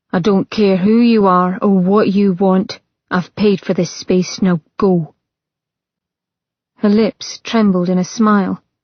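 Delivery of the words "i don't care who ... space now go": lifeless, toneless, dead flat monotone. Not lifting his head to acknowledge her, a man speaks in a dead flat voice. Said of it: "he spoke in a dead, flat voice".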